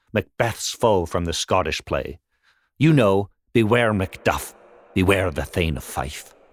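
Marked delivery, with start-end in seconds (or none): none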